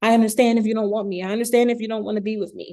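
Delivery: tearful, desperate, whiny voice while crying. Giving dating advice, acting out what not to say, imitating someone crying. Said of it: "You're crying".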